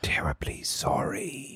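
character voice, whispered. Voicing a game character while the party hides from a searcher; Grib whispering. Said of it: "Grib whispers".

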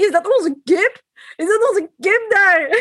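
put-on Limburg regional accent. Retelling how Gloria spotted something yellow in the distance, in Gloria's thick Limburg accent. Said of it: "in haar sappig Limburgs accent".

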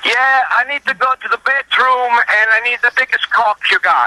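put-on thickest Italian accent, very high and loud. Retelling what the father asked a young clerk: imitating father's heavy italian accent. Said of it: "he has the heaviest Italian accent".

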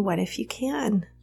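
acted very calm speech. Recounting labor, imitating her doula's very calm reply. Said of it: "she would say very calmly".

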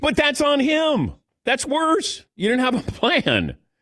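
very high, shrill, all-out shouting. Arguing about a team that never had a draft plan, yelling. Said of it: "I don't know why I'm yelling".

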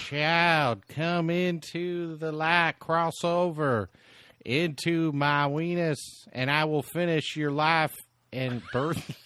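put-on voice of a tiny elderly woman. During a comic bit, the speaker does a Poltergeist old lady impression. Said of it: "you were imitating the old little lady from Poltergeist".

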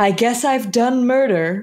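sulky, downcast, sullen tone. Quoting a character's line from a buddy cop caper, mock-sullen. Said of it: "She just goes just so sullenly".

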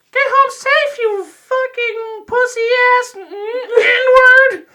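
very high, slow, drawn-out puppet voice. Imagining a puppet character drunkenly insulting friends: Elmo voice. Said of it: "I could totally see that being Elmo".

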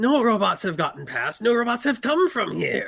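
horrible, loud, high-pitched screeching voice. A guard is questioned by the party about robots, screeching in his horrible voice. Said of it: "One of the batters approaches you and screeches in his horrible voice".

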